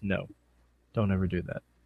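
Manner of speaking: very quiet, hushed, level deadpan. Recapping a tag match, quoting Lashley's reply to Bennett: deadpan Lashley impression. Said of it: "Lashley just deadpans him and says".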